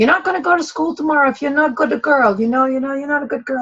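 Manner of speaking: put-on rapid, high-pitched scolding Italian accent. Recalling her mother's threat about not going to school, in her mother's Italian accent. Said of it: "trying to mimic my mother's Italian accent".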